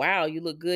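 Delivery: ordinary talk, nothing marked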